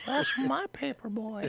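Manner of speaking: put-on very high, creepy old-man voice. Doing a voice of the creepy old man from Family Guy: old man from Family Guy voice. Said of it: "I've never heard anyone be able to do that voice".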